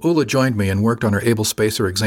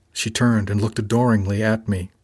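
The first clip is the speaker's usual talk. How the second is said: plain reading voice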